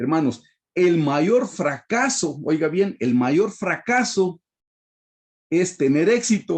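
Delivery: slow, deliberate, emphatic delivery.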